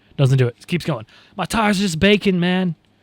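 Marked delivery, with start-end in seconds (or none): 1.4-2.8 surfer-style put-on voice. Retelling a driver's radio message about his tires: surfer-voiced Lewis impression. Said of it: "Like Surfer Lewis for some reason".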